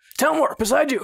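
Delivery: high, loud call shouted out. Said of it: "I'm just gonna call out".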